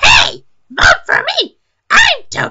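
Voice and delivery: very high, loud character voice. Voicing Toadette asking viewers for votes: Toadette voice. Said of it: "ah, my voice".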